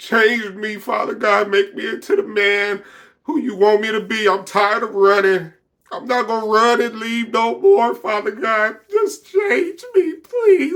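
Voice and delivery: high, tearful sobbing, voice breaking. Recounting crying out to God, repeating the prayer while crying. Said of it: "like I'm crying worse than this".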